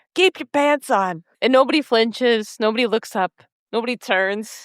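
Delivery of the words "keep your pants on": high, loud yell projected across a room. Recapping a show scene where Luke yells across the diner: Luke yelling. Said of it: "Luke yells across the diner".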